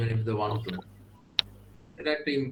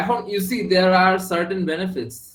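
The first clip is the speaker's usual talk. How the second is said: higher-pitched sarcastic tone. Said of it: "I'm being sarcastic".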